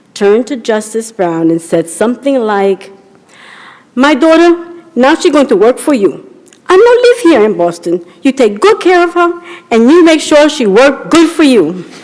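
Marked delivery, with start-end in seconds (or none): 3.9-11.7 put-on thick Latin American accent, broken English, pitched up.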